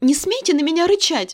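clear, ringing voice. The narrator, unafraid, answers a man who growled at her: ringing demand. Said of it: "потребовала со звоном".

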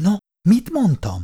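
softly whispered. Narrator reading a story aloud voices a character's line, whispered. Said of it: "Suttogta Péteri".

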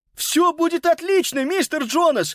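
very high-pitched, beaming outcry. Reading a story, a boy answers the uncle's instructions, exclaiming. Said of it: "воскликнул Питер".

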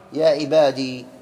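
normal talking voice

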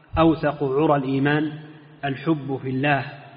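normal talking voice

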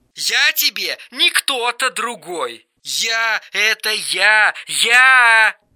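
high, slow squealing shriek, я stretched long. Eric, mistaken for someone else by the narrator, protests back at him; shrieking. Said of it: "Взвизгнул он".

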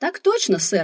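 peppy, eager, cheery, upbeat exclamation. Reading a novel aloud, the narrator answers the giant's question: cheerfully exclaimed. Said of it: "бодро воскликнула я".

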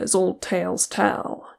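ordinary talk

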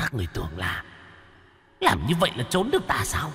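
hushed, ghostly spirit voice, rising pitch. Narrator voices a figure on the ceiling taunting three people below, in a shrill voice. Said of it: "giọng the thé".

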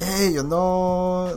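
put-on Latin-style accent. Suggesting accents the other speaker could do, demonstrating a Latin-type accent. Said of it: "you could probably do some Latin type things".

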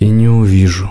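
wearily, tired and weary. A lizard answers his companion, tired. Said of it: "устало заключил варан".

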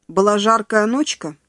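ordinary talk

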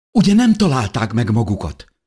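frightened, pitched high. In a moment of danger, a character is asking in fright. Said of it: "Kérdezte Natalie rémülten".

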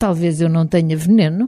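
plain

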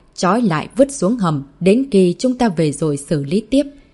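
usual speaking voice

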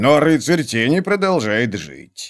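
ordinary delivery

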